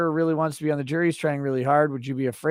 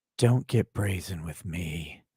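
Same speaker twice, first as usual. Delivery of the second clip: half-whisper, low and close; 9 semitones lower, 3 dB quieter than usual. Reading a viewer comment aloud in the requested voice: Lady Judge ASMR voice. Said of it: "in Lady Judge A S M R voice".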